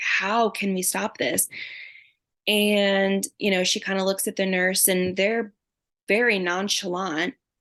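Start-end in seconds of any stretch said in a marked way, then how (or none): 0.0-1.5 louder, deliberate delivery. Recounting a moment beside her husband, urging that it be stopped: retelling a raised voice. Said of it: "not screaming, but I'm like raising my voice".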